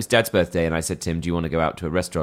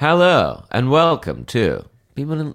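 put-on authoritative, slow American morning TV presenter voice; 8 semitones higher, 5 dB louder than usual. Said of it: "in a sort of American morning T V presenter way".

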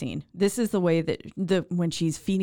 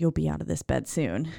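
mock-threatening, menacing tone. Retelling a woman spoon-feeding someone in bed, mock-threatening. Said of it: "and it's a threat".

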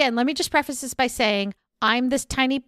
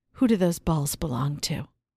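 very low, sultry, sexy seductive voice; 8 semitones lower than usual. Asked by a co-speaker to try the line in a sexy voice; sexy voice. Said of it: "Try it in a sexy voice".

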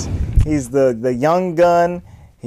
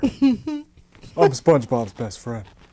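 low cartoon voice with swooping pitch; 4 semitones lower, 5 dB quieter than usual. Asked by the others to do the voice: Patrick Star voice. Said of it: "Patrick Star".

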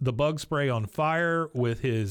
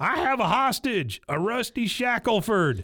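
acted-out, high, slow, unhinged, crazed shout; 7 semitones higher than usual. Retelling a scene where Dale shouts down from the tower, imitating Dale's crazy-man shout. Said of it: "shouting down from the tower in his best crazy man voice".

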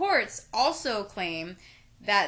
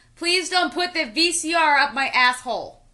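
put-on loud drunken yell. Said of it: "I heard someone yell".

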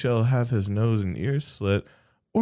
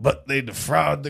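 put-on Southern Kentucky accent. Reading an old text aloud after being told to do it in an accent, Kentucky lawyer accent. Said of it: "Why'd you go Kentucky lawyer?".

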